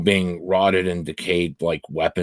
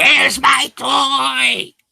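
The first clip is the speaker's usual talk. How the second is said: rasping, shrill, very high monster screech; 4 dB louder than usual. As the game master, voicing the damaged big creature at the players: shrieking monster. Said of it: "it just shrieks at you".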